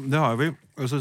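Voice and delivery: speaking while chewing, mouth full. Co-host answers a question about listener suggestions while eating, talking with mouth full. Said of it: "som du kanskje hører, så spiser jeg litt".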